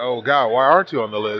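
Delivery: plain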